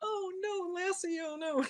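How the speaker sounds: mock very high, very slow, drawn-out sobbing wail. Retelling crying at an old movie where a dog dies: imitating own past crying. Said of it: "And I start crying".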